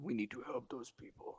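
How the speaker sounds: put-on creature voice. Playing a Minotaur who urges the group to help: Minotaur voice. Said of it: "I gotta get my Minotaur voice down".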